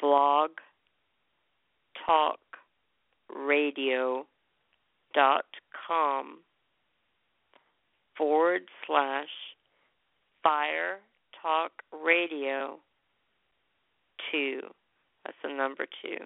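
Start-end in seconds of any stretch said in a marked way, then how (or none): 0.0-14.6 much slower pace. Repeating the web address for listeners, slower. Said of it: "say it slower".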